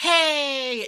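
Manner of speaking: fake-polite passive-aggressive tone. Showing the voice people use for polite workplace confrontation: passive-aggressive "hey". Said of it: "that voice".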